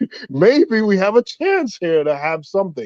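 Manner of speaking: high, wide, laughing, hopeful excitement.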